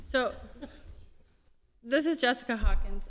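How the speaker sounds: speaking up loudly.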